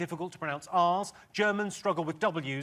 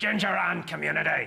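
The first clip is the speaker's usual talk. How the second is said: Northern Irish Belfast accent; 4 dB louder than usual. Showing the key phrase that lets her do an accent, in a Belfast accent. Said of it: "I can do Belfast".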